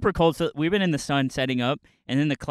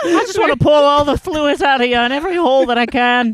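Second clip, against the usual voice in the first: fake Irish accent, very high and loud; 13 semitones higher, 8 dB louder than usual. Doing a bit in front of friends: put-on Irish accent. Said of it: "what, being Scottish or Irish?".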